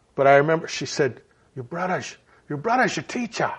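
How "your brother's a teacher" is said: put-on soft German accent. Remembering what she said from the back, quote her in her German accent. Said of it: "in her German accent".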